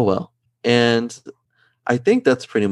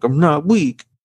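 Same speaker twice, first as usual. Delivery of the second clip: high, whiny voice. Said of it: "rather than him just being whiny and being like".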